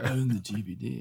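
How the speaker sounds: slow, unhurried delivery with each word drawn out. Repeating the line after being told it sounded like Keanu Reeves: Keanu Reeves voice. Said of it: "You said it a similar way".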